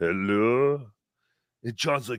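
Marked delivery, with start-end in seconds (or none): 0.0-0.9 put-on voice of an elderly man. Retelling a phone call, imitating Shuli's father: old man voice. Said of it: "you just hear this old man like".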